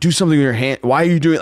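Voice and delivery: acted-out yell. Recalling watching himself on tape, retelling yelling at himself. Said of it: "like yelling at myself like it was game tape".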